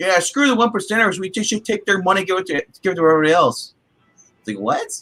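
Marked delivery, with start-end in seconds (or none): 0.0-3.7 high-pitched, derisive ranting voice. Retelling the cliche argument seen online: mocking online complainers. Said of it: "it's the cliche argument I see online".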